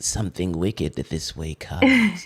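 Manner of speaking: witchy narrator voice. Describing a mysterious-looking picture as a narrator would say it, witch voice. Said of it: "a witch voice doing the narration saying".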